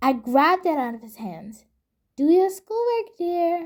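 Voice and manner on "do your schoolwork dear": put-on sugary, sickly sweet voice. Retelling telling a partner to do schoolwork: retelling own sweetest voice. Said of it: "I said in the sweetest voice I could muster".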